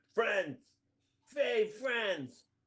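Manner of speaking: high shouted yell, fully in character. Acting as a character yelling at a sprite: yelling in character. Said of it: "just yell, yeah".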